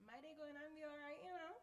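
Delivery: Trinidadian accent. Answering an interviewer's question to show off the accent: Trinidadian accent. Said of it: "I'll answer it in, with my accent".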